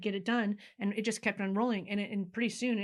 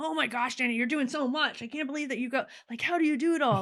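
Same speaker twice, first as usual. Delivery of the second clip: mock buttering-up, admiring tone, pitched up; 5 semitones higher, 4 dB louder than usual. Retelling what mastermind people said to danny: imitating flattering praise. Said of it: "say it in a more flattering way".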